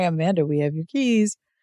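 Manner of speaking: usual speaking voice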